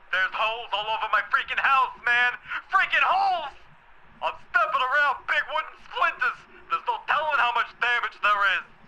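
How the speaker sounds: frantic, panicked, freaking out. A homeowner demanding answers about their house, freaking out. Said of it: "I'm freaking out over here!".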